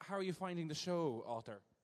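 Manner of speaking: put-on anglicised West Brit Irish accent. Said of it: "my West Brit accent came out again".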